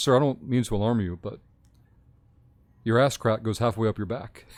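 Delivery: put-on deadpan delivery. Retelling what a doctor said to a patient: retelling a deadpan remark. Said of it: "deadpan, straight face it goes".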